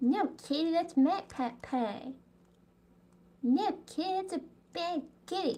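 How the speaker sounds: high, animated-show schoolboy voice. Talking about an unfamiliar dish, slipping into a Cartman impression. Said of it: "That's my best impression of Cartman".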